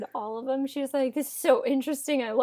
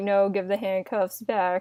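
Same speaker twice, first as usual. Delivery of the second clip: put-on flat monotone, lower pitch; 4 semitones lower than usual. Retelling how an unbothered police officer reacts: imitating a monotone voice. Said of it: "very monotone".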